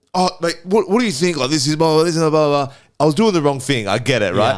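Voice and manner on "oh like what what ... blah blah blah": put-on angry rant, higher. Retelling how the carpet guy mouthed off: imitating someone mouthing off. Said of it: "mouthing off at me".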